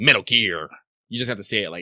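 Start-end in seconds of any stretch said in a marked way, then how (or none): 0.0-0.7 edgy delivery. Showing how to say the game's name: edgy delivery. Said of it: "as edgy as possible".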